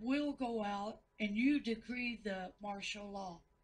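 ordinary delivery

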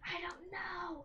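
quiet, slow whisper. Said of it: "Why are we whispering?".

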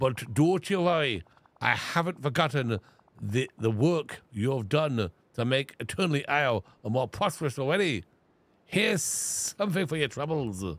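put-on Scottish accent, played up. Voicing a game character's dialogue, in a Scottish accent. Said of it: "I really Scottished it up a little bit".

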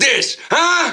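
ordinary delivery, nothing marked

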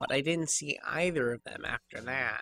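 quiet, nasally put-on voice. In a game, the studio props assistant tells her questioners who she saw, nasally. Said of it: "I'm an assistant around here. I help with props and stuff. ... nasally. Nasal".

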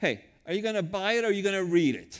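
put-on loud New York accent. Recalling what people at New York bookstores would say, in a New York accent. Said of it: "with an accent of a New Yorker".

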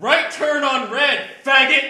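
very loud, high shouted yell. Retelling a sober man yelling out the window at another driver, retelling a yell. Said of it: "he yells out the window".

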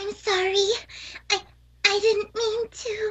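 high-pitched cutesy cartoon voice. Asked to do the Fluttershy thing again, in a Fluttershy voice. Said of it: "the Fluttershy thing I just did?".

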